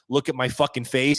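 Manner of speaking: ordinary talk, nothing marked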